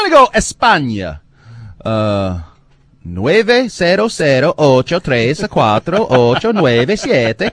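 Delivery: put-on Scandinavian-sounding Spanish accent. Radio host inviting callers from Spain to phone in, Spanish-Norwegian accent. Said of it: "What accent was that?".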